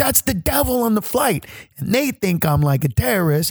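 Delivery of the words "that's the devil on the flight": put-on high scream, loud. Retelling a dream, warning everybody on a flight: retelling own screaming. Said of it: "I'm trying to scream to everybody".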